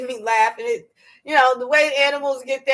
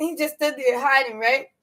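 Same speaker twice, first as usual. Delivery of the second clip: plain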